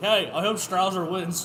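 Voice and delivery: ordinary talk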